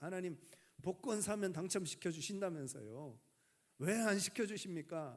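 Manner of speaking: indignant, argumentative voice. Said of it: "따지듯이 묻습니다".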